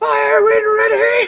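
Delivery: dramatic battle cry, very high and slow.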